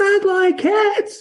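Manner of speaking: very high, piercing, shrill, impassioned mouse voice. Telling of the mouse talking back, voicing it in a shrill, passionate voice. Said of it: "That's a shrill, passionate voice, right?".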